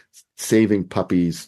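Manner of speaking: ordinary talk, nothing marked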